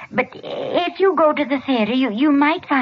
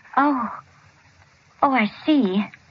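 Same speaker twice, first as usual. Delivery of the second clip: grudging, joyless, unhappy and reluctant. A mother hears her son is cured and discharged, not sounding very happy. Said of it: "You don't sound very happy about it".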